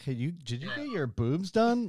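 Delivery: voice of a creepy uncle. Acting out what a relative might ask: imitating a creepy uncle. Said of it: "that creepy uncle".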